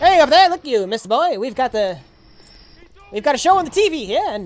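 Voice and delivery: put-on old-fashioned newsman voice. The speaker shows off their go-to accent: north atlantic accent. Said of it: "my go-to is the North Atlantic accent".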